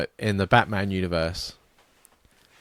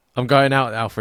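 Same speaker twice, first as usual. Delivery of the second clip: ordinary delivery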